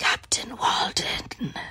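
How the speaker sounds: rasping, gravelly, hushed whisper. Retelling a man on an island repeating his name back, imitating a gravelly voice. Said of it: "in like this gravelly voice".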